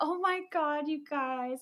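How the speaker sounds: put-on slow, cute, unhurried babyish voice. Retelling Bridget being excited about the ghost hunt: Bridget's cute baby voice. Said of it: "she has like this cute little like baby voice".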